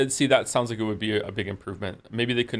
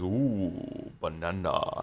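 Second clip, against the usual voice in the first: hammed-up, goofy, played-up cartoon ape voice; 3 semitones lower, 4 dB quieter than usual. Asked why they say a word that way, quoting a video game: Donkey Kong 64 voice. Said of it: "that's how he says it in Donkey Kong sixty-four".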